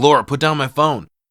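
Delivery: acted yelling. Retelling how a character snaps at a stepmom over his phone: imitating someone yelling. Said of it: "He rushes over and yells at her".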